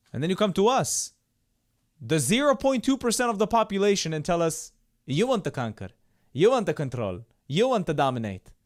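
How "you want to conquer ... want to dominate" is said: put-on Arabic accent, much lower pitch. Speaking to an audience and quoting others, in an Arabic accent. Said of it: "How's my Arabic accent?".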